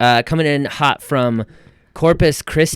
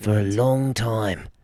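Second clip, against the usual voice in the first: put-on British nature narrator voice, quieter; 5 dB quieter than usual. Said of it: "That's what he sounds like".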